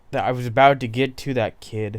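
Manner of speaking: ordinary talk, nothing marked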